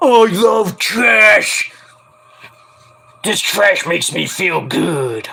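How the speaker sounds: drawn-out voice, fully in character. Naming the greatest puppet character, then voicing him: Oscar the Grouch voice. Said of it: "Oscar the Grouch".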